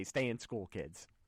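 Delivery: normal talking voice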